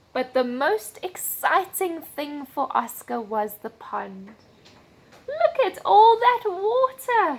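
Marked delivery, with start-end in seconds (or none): 5.2-7.3 very high, loud, squeaky voice. Reading a story aloud, voicing Oscar as he first sees the pond: Oscar's squeaky voice. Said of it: "he squeaked".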